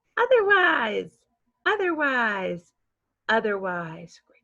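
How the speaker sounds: upbeat, glad, happy, cheerful voice. Teaching a vocabulary word, the speaker models saying it three times in a happy voice. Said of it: "say otherwise in a happy voice three times".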